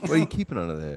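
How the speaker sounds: high-pitched, mock Italian-American tough guy voice.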